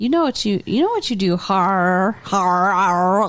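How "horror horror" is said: put-on choked, strangled-sounding pronunciation. Mimicking how the other speaker says a word, imitating a strangled pronunciation. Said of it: "You sound like you're choking on some candy corn".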